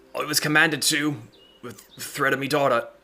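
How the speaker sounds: strained, forced speech. Compelled by a spell, a character speaks despite trying to keep quiet; struggling, forced confession. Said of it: "because of your your spell and the failure".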